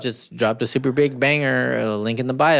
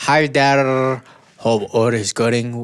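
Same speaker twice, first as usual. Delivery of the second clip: put-on Turkish accent; 2 semitones lower than usual. Showing a partner how to say a greeting, in a Turkish or Middle Eastern accent. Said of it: "Like a Turkish, maybe Middle Eastern accent".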